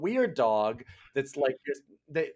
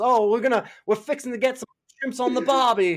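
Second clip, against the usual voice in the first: very exaggerated British accent, laid on thick, loud, high; 9 semitones higher, 6 dB louder than usual. Retelling how a super British man talks, in a super British accent. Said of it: "he's super British and he goes".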